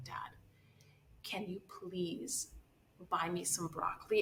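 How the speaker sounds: barely audible, very soft, cringing voice. Retelling asking her dad for something, imitating a cringing request. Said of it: "And I said it like cringing".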